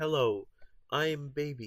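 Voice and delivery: stilted AI-like voice. Describing how a game character talks: stilted Circus Baby voice. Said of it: "She says stuff kind of stilted".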